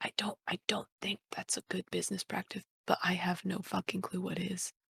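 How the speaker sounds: whispered, put-on character voice. Voicing a character who grabs Gara by the arm: whispering. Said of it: "grab Gara by the arm and whisper in his ear".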